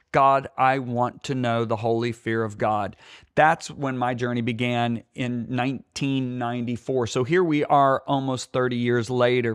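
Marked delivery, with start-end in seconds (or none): none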